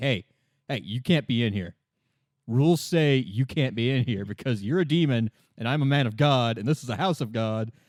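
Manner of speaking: plain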